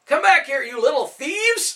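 shrill, high-pitched, loud angry hollered yell. A baker chasing a pack of street children calls after them, yelling. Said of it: "a voice yelled".

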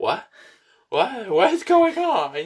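baffled, drawn-out tone. Imitating a friend standing there with mouth open: imitating a confused friend. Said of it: "He's over here just, like, his mouth is open".

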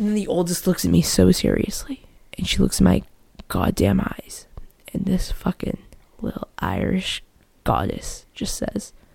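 low, hushed storytelling whisper.

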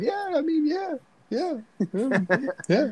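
very high, confused, eager-to-please agreeing tone. Imitating an actor who sounds confused and approval-seeking: imitating Mark Wahlberg. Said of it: "always sounds like he's either searching for approval or just incredibly confused".

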